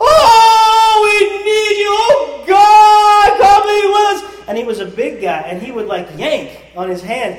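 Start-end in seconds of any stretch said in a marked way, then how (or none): 0.0-4.5 very high, very loud, slow, drawn-out yell. Describing a man in a prayer circle who yelled mid-prayer, imitating his yelling. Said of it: "He would start yelling like that in the middle".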